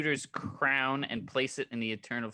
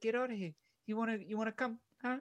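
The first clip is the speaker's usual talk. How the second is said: very high-pitched character voice; 11 semitones higher, 5 dB quieter than usual. Retelling a film scene, playing Korg inviting people onto the spaceship: Korg voice. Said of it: "and then it's just Korg, and he's just like".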